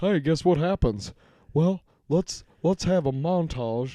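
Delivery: fake southern accent, drawled. Mocking a lame storytelling style with a montage: put-on Southern accent. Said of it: "why are we talking like this?".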